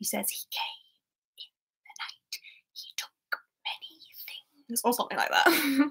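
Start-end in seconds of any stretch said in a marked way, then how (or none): 0.3-4.8 very quiet whisper under the breath. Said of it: "That's my Creature impression".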